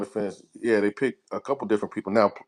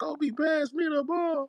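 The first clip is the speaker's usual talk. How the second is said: put-on crying voice, higher and quieter; 5 dB quieter than usual. Quoting a basketball player asking a teammate for the ball: imitating Ron Artest, sounding tearful. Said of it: "why you say it like that?".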